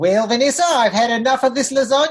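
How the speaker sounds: put-on Australian-accented voice. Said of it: "I gotta talk to her in Australian thing".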